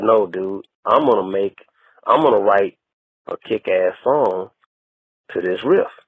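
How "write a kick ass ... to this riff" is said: normal talking voice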